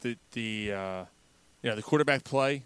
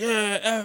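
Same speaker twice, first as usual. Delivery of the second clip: high, slow, gloating cheer. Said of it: "and he's like".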